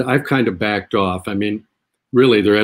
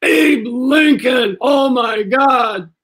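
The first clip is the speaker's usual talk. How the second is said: mock very high, stretched-out full-voice yell; 3 dB louder than usual. Retelling a stranger in an airport terminal: imitating someone yelling full voice. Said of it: "somebody yells full voice".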